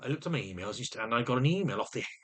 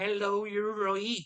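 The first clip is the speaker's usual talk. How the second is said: West Country accent, pitched up; 9 semitones higher than usual. Showing an imitation of a support worker: West Country accent. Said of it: "I do my support workers accent".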